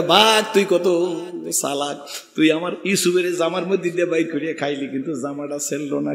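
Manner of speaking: ordinary delivery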